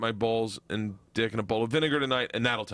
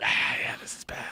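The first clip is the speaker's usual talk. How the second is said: put-on mock whisper. Joking that the vinegar talks to you, put-on whisper as the vinegar. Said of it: "it'll whisper to you".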